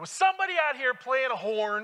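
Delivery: hollered at high pitch. Retelling what a bearded man in a pickup truck asked: imitating someone yelling. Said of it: "he yells at me".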